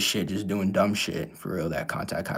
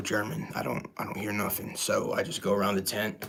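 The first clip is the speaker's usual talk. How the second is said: ordinary talk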